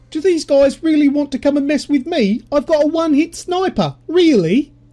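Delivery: very high-pitched put-on English accent. Retelling what an opponent in a game said: imitating a middle-aged Englishman. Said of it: "he sounded like a forty-five-year-old pom".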